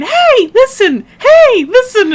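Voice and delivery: very high, swooping, sing-song little fairy call. Retelling a game mod that calls out near diamonds: imitating the little sprite's call. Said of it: "it'll start going".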